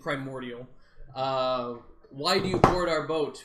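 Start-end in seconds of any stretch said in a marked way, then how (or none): 2.1-3.4 loud, booming, commanding voice, louder. Speaking to a creature in a magically amplified voice: loud and commanding voice. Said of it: "so I sound loud and commanding".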